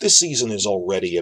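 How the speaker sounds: usual speaking voice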